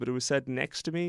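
ordinary talk, nothing marked

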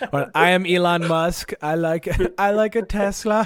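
very slow, drawn-out, put-on Italian accent. Doing an impression after saying he is Elon Musk: Elon Musk impression in Italian accent. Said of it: "That was Italian".

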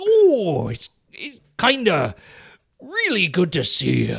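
high, swooping character voice. Doing a man's voice for another speaker to recognize, imitating his voice. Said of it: "He sounds like that".

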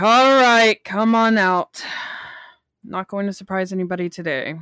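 menacing, threatening, intimidating voice. Voicing a character calling out hidden attackers: intimidating. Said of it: "I'll roll intimidate".

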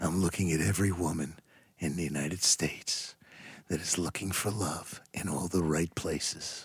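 very deep, hushed, seductive murmur. Voicing the dad after being told to give him a sexy voice. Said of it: "Give him a sexy voice".

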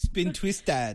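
slight mock Jamaican accent. Repeating a contestant's line from the show: imitating with a slight jamaican accent. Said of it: "It came out a little Jamaican".

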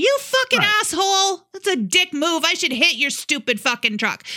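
acted, hard high yelling. Retelling yelling at a truck driver who cut them off, retelling a yell. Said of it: "but I'm yelling".

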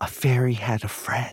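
whispering. Repeating a story line after the leader, in a whisper. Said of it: "repeat after me in a whisper".

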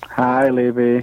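a little disappointed. Guest greeting the radio host on air, a little disappointed. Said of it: "You sound a little disappointed".

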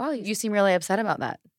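ordinary delivery

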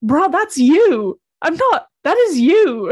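slow, drawn-out, high, loud call in disguised voice.

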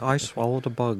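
attempted put-on British accent. Imitating Patrick Stewart saying a joke line: attempted Patrick Stewart impression. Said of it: "in, like, his perfect British accent, which I didn't do at all".

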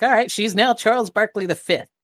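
awkward, high-pitched eccentric voice. Retelling how the character Nivitz named a girl: eccentric, awkward Nivitz voice. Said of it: "he's kind of become very eccentric, and he's very awkward".

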